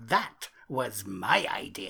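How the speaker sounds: very slow, dragged-out delivery with creak. Quoting a comedian's catchphrase: Bob Mortimer impression. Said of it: "where Bob Mortimer would always say".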